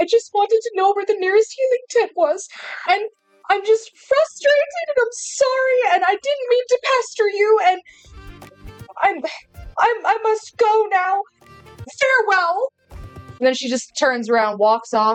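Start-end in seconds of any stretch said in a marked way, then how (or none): 0.0-12.7 tearful voice, crying while speaking. Voicing a character who apologizes to a group: crying while pleading. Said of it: "And she starts crying".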